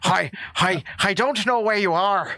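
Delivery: put-on bad American accent. Imitating an actor trying to sound American: Liam Neeson doing a bad American accent. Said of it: "Liam Neeson trying to do an American accent".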